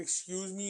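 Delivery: very sassy, full of attitude. Retelling what a guy said in detention: imitating a sassy "excuse me". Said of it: "in a very sassy way".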